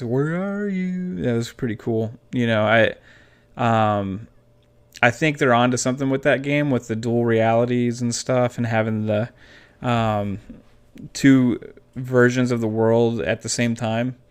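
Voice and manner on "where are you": high, eerie, haunting, creepy voice. Reminiscing about a video game, imitating its creepy voice. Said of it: "creepy voice".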